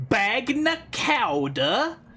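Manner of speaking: over-the-top American accent. Trying different pronunciations of a word, then saying it american accent. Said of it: "Or I could say it like an American".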